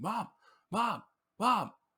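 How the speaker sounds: high, loud, desperate scream. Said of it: "he's just, like, screaming".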